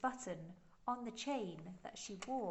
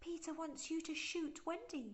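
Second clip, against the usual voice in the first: very high, shrill, piping fairy voice; 10 semitones higher than usual. Narrating, Tinker Bell answers the boys with Peter's order, in a shrill voice. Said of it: "the shrill voice of Tinker Bell".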